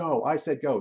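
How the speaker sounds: high yelled words, said twice. Retelling how she finally yelled after ten minutes, imitating her yelling. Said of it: "she starts yelling at this thing".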